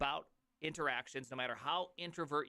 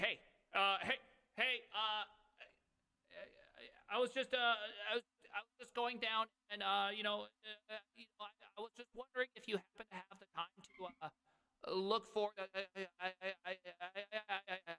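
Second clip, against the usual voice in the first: choppy, cutting-out bad-mic stammer, drawn-out "I"; 7 semitones higher than usual. Imitating someone on a call whose microphone cuts out, choppy cutting-out mic voice. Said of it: "their voice is like".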